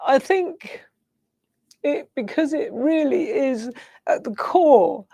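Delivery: crying through the words. Speaker tearing up again while talking, crying. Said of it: "I don't know why I'm crying again".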